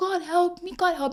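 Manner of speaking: put-on tearful crying voice. Retelling how they once cried out desperately to God for help during a hard time. Imitating own crying. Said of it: "and I'd be crying".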